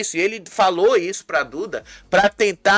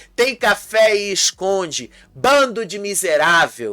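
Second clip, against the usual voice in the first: ordinary delivery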